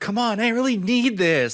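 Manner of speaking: very high, loud, desperate pleading. Retelling how a man on a recording begged a woman, imitating someone begging. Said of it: "He's like begging this woman".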